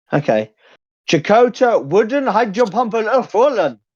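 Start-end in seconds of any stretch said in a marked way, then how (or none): 1.0-3.7 attempted put-on German accent, pitched up. Speaker saying a name in German before a German speaker does it properly, attempted German accent. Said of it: "Try to do a German".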